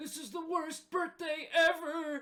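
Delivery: put-on very high, very loud, shrill old man shout. Narrating a scene, voicing an old man yelling from inside the house. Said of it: "you hear an old man yell".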